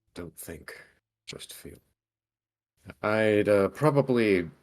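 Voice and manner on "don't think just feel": quiet muttering under the breath. Speaking in character to oneself: muttered under the breath. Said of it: "mutter under my breath".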